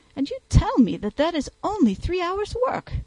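very high, astonished, amazed exclamation. Reading a novel, a man turns to the lawyer, exclamation. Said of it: "he exclaimed".

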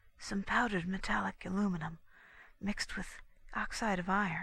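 whispering. She answers the question put to her, whispered. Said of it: "whispered Constance in return".

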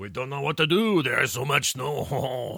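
terrible fake French accent, high. A speaker jokes about someone snowed in, terrible French accent. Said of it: "Terrible French accent".

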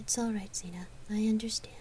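distracted, half-attending. She answers Zena, saying it absently. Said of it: "she said absently".

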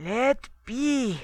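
dead-sounding thick croak. A man kicks away the people touching him: croaking. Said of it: "croaked Holdriksson".

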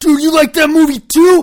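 shrill, excited, very loud shouting at full blast. Mocking how people at parties react to a shared movie, imitating someone yelling. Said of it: "Stop yelling in my ear".

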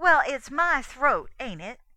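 very loud, high, sharp reply. A girl turns on the man mocking someone she vouched for, retorting. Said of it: "eyes flashing and retorted".

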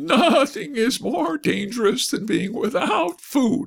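sniffy, haughty delivery, pitched very high. The horse replies to his young master's rebuke with a sniff. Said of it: "declared the horse with a sniff at the rebuke".

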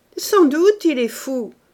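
loud, high sneering words spoken through a snigger. The uncle replies to Marthe, who keeps repeating that he is mad: sniggering. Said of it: "dit l'oncle en ricanant".

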